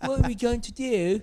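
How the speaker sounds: high, loud, mock posh British accent. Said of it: "They didn't all have British accents".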